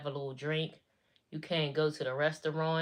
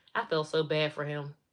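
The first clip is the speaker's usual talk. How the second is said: ordinary delivery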